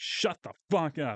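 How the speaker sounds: stern, strict put-on dad voice. Retelling how others silenced a loud coworker: imitating a stern dad voice. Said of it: "use their dad voice on him and be like".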